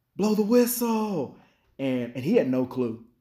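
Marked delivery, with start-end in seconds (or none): 0.2-1.4 mock very high, shouted yell. Retelling a scrimmage when the coach yelled at the officials: imitating Coach Rankin yelling. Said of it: "So he started yelling".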